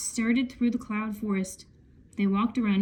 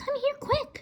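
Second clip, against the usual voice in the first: half-whispered, half-whispery, pitched very high; 3 dB quieter than usual. Reading a story aloud, Annie calls Jack over to her in a half-whispery voice. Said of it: "Annie called in a whispery voice".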